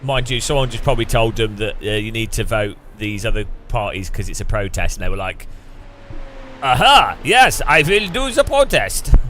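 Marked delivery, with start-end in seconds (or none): 6.6-9.1 slow, dragged-out bad French accent. Joking about French voters choosing protest parties; bad French accent. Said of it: "my French accent always turns into like Israeli".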